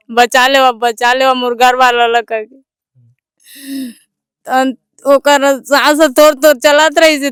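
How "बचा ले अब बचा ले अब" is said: ordinary talk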